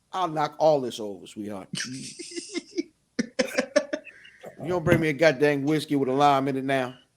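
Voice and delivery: ordinary talk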